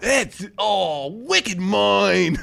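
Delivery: very slow, put-on Kiwi accent drifting into Cockney. Joking with a caller about a kiwi word, put-on kiwi accent slipping into cockney. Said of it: "you're bouncing between Kiwi and fucking Cockney".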